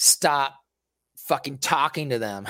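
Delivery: plain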